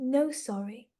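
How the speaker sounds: imitated soft, gentle voice. Speaker quoting what a man beside him would say, retelling a gentle 'No, sorry'. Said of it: "Just really gently like that".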